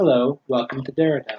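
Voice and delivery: serene, unruffled, super calm, soft robot voice. Voicing a robot guard greeting travelers at the entrance: super calm robot guard. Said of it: "Super calm".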